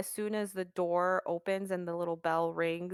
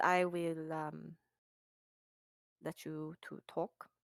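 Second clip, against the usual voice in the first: put-on German accent, quieter; 5 dB quieter than usual. A character lets a visitor talk business with Thaddeus, German accent. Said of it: "now I gotta do a German accent".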